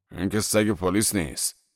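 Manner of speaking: ordinary delivery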